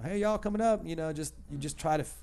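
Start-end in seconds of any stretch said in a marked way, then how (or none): 0.0-0.9 put-on, pitched-up country radio DJ twang. Recalling working at a country radio station, doing country radio DJ voice. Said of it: "I worked at a country station".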